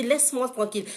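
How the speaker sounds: ordinary delivery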